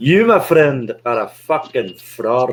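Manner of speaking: put-on, adopted Scottish brogue. Repeating the line after being told to go for it: Scottish accent. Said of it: "Should we do it in Scottish?".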